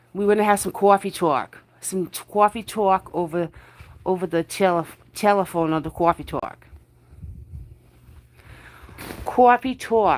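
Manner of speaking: put-on New Jersey accent. Speaker welcoming a guest on his live, in a mock New Jersey accent. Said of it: "I got the Jersey going on".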